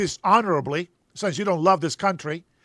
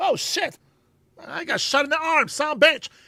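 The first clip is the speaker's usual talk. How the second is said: sudden spoken outburst; 9 semitones higher than usual. Retelling how soldiers react to getting shot: imitating a shot soldier. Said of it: "I have seen soldiers get shot and be like".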